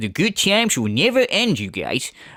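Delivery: mocking, jabbing put-on voice. Mocking a streamer's catchphrase: imitating Darkside Phil. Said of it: "And he's like".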